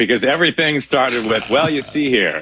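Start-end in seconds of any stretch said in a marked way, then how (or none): 1.5-2.4 put-on old-timey baseball play-by-play announcer voice. Showing the on-ramp phrase for an old-timey baseball play-by-play voice. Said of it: "for my old-timey baseball play-by-play voice".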